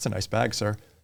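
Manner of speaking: put-on passive-aggressive tone. Retelling an agent's reply to someone handing over a bag: imitating a passive-aggressive reply. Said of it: "kind of passive aggressive".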